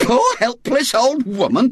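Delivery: offended, indignant tone. An old woman at the attic window repeats words said about her, indignant echo. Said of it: "she echoed indignantly".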